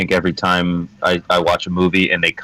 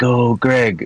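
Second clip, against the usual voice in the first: private aside, higher pitch; 5 semitones higher than usual. In a tabletop game, a player's character speaks to Greg: said under the breath. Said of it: "I'll say under my breath".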